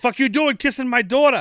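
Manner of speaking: put-on Chicago cop accent. Retelling a movie scene, a father catching a kiss: Chicago accent. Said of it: "the best Chicago I got in me".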